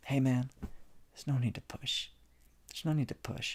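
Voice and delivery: soft, gentle, hushed near-whisper. Speaker voices a gentle inner voice addressing the listener, in a gentle voice. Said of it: "this gentle voice here telling you".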